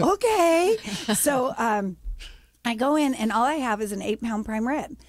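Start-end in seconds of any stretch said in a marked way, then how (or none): 0.0-0.8 very high-pitched, shocked squeak. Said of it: "And I'm like".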